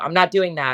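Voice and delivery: flat-out, pretty angry tone. Retelling what a middle child used to say: imitating an angry tone. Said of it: "he would say it in a pretty angry tone".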